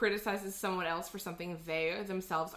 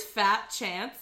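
ordinary talk

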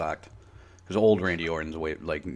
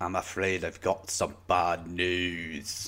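slow, very drawn-out fake British accent; 6 dB quieter than usual. In conversation, a speaker tries a line in a put-on british accent. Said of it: "That was a pretty decent British at the end".

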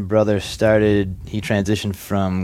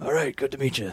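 put-on raspy voice, much quieter; 5 semitones higher, 7 dB quieter than usual. Retelling your WWE tryout, quoting the talent scout, imitating his raspy voice. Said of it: "He had the most raspy voice".

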